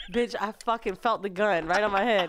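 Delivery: ordinary talk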